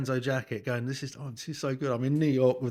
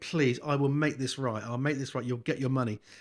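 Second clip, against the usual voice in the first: put-on begging, pleading voice. Retelling a phone call to Lewis about money: imitating own begging. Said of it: "I'm begging him".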